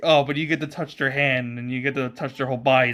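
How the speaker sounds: normal talking voice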